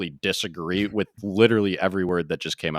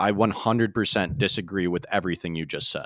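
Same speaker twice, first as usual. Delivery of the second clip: plain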